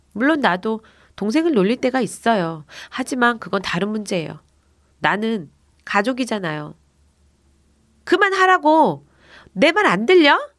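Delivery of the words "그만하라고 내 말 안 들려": high-pitched shouting. A child shouts again at kids teasing their little brother, shouting again. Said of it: "내가 다시 소리쳤어요".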